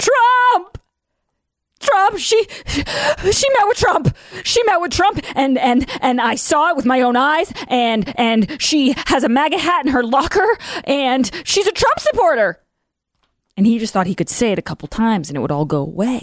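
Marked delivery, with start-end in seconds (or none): 0.0-12.6 shrill, very high, drawn-out accusing scream. Speaker mimics someone screaming accusations to take a person down: mock screaming. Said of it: "you can just start screaming".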